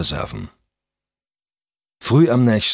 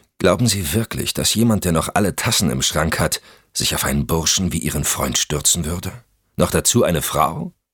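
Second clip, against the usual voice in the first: plain reading voice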